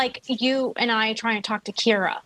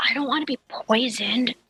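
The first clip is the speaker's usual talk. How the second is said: mock whispering. Retelling whispering to a companion after being offered a drink, retelling a whisper. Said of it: "and I whisper to him".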